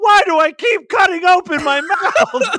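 shrieking scream, very high and very loud. Retelling a story, the speaker voices a man who bit into something, imitating him screaming. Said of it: "he's screaming".

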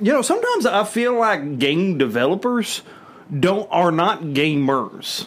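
put-on country accent, very slow drawn-out drawl. Sharing a theory with listeners, put-on country accent. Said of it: "I'm using my country voice".

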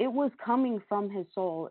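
plain

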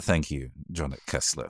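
shy, low, barely audible mumbling. A character who can't make eye contact gives thanks, shy mumbling. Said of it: "looks at the floor and kind of mumbles".

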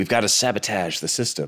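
cartoon character voice. Retelling a famous recording outtake: imitating William Shatner's cartoon voice. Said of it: "he's doing an animated voice".

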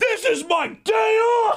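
very high, shrill, slow, drawn-out scream. Retelling how a guy screamed while their team was losing, retelling a scream. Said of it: "And he's screaming".

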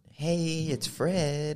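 high-pitched, squeaky voice. Answering which YouTuber inspired the channel: high-pitched Fred voice. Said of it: "he had a high-pitched voice".

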